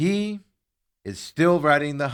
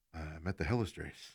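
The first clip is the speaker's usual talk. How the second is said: soft, low whisper. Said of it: "Why are you whispering?".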